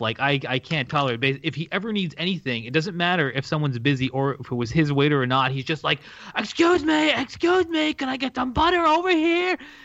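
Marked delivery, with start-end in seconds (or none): 6.3-9.6 put-on rude, very high, loud yelling. Retelling how dad calls out to wait staff: imitating dad yelling across a restaurant. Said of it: "yelling across the restaurant".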